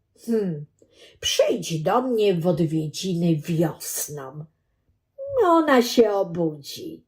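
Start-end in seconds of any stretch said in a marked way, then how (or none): none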